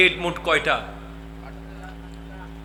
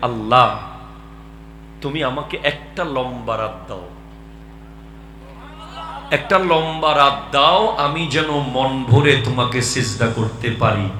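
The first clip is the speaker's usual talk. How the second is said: ordinary talk, nothing marked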